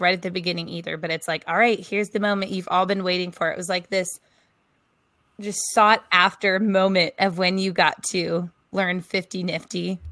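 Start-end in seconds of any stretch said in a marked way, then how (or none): none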